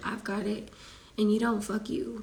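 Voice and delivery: ordinary talk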